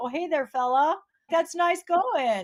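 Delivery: put-on Upper Peninsula Michigan accent. Parent retelling how the kids talked home from college: put-on Upper Peninsula accent. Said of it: "they'll always put on their UP accents".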